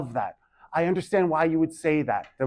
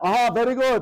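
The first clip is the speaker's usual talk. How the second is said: put-on elderly man voice, Persian accent, pitched up; 8 semitones higher than usual. A teacher praising a student who is getting it, in an old persian uncle voice. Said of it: "I turn into like my old Persian uncle".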